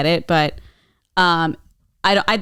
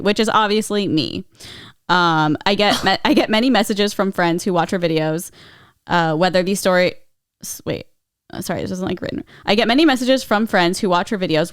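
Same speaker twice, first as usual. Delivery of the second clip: ordinary talk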